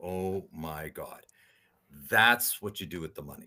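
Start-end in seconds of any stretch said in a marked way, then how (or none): 0.0-1.2 sobbing, tearful, overcome with crying. Retelling what a woman said, the speaker is imitating someone sobbing. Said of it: "like she's just sobbing".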